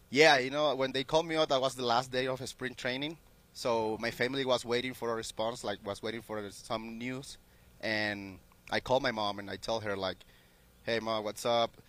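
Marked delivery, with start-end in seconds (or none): 10.8-11.6 put-on, acted sad voice. Retelling a phone call to mom, imitating own put-on sad voice. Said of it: "acting like I'm sad".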